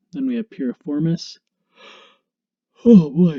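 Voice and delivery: talking through a yawn. Anatomy instructor walks viewers through muscles, yawning. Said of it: "sorry, I'm yawning".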